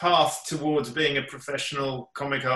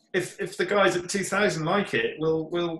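cheeky, higher pitched. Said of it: "I sort of cheekily said".

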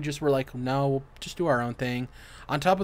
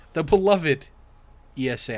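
heavy, mocking sarcasm, raised voice; 5 dB louder than usual. Introducing the next news item in a sarcastic tone. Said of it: "I'm saying that sarcastically".

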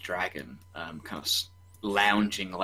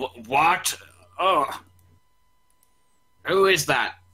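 loud, slow, booming dragon voice, pitched up; 9 semitones higher, 6 dB louder than usual. Voicing a big brass dragon just woken by travelers: voicing a brass dragon. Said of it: "big brass dragon kinda gets, gets to his feet and he goes".

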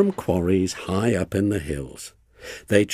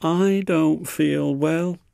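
drawn-out, slow, high groaning complaint; 8 semitones higher than usual. Next morning, acting on the plan to seem ill, he says: groaned. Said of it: "he groaned next morning".

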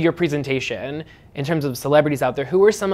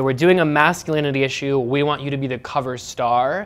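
usual speaking voice

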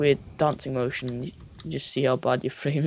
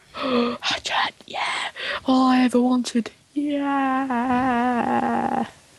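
sarcastic mock enthusiasm, higher pitch; 9 semitones higher than usual. Reacting to being offered a hatchet: sarcastic fake excitement. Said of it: "a bit sarcastic".

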